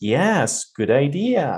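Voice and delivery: voice rising with interest and enthusiasm. Speaker contrasts two readings for listeners: rising interested tone. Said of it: "Which one sounds more interested?".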